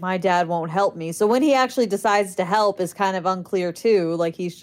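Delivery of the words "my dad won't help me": put-on upset character voice. Recapping a scene where Nancy gets upset and leaves, imitating upset Nancy. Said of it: "Nancy gets all upset and she leaves".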